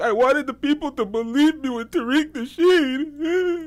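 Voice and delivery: put-on crying voice. Mocking a man who is crying on video: mocking a crying man. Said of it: "he's really crying. He's really like".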